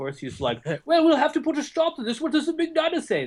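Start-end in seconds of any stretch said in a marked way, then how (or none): 0.8-3.2 very high, put-on British accent. Joking about Trump's supposed real voice, doing Trump in a British accent. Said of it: "Because he's got like a British accent".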